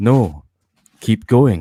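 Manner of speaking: plain, normal, unaffected voice. Retelling a scene from a book, imitating Owen. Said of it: "Like that".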